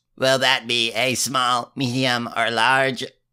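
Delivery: put-on croaky, froggy teen voice. Mocking a teenage restaurant worker taking an order, froggy croaky voice. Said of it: "a voice that makes every word a croak".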